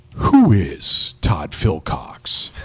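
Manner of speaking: very deep, dark, very slow low voice.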